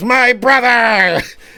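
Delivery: very high, loud, shrill goblin shriek. Voicing a goblin who fires an arrow from behind: goblin scream. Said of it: "as a goblin screams".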